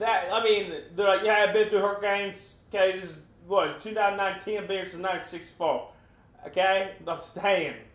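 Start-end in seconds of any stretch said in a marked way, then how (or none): 1.2-7.7 put-on North Carolina accent. Mimicking people on the news during hurricanes, in a North Carolina accent. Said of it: "That's my North Carolina accent".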